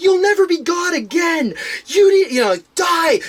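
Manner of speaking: loud yell. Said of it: "break into yelling".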